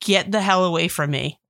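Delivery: ordinary talk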